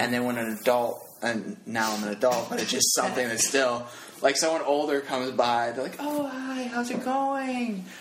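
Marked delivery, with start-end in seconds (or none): 6.0-7.9 fake sweet, innocent voice, very high, drawn out. Describing how a friend talks when someone older comes by, mock sweet, innocent voice. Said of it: "Like sweet and innocent in their voice".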